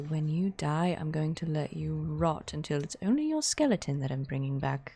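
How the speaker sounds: very quiet, hushed, almost under the breath. Leaning over in character to threaten someone: very quiet voice. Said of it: "very quietly say".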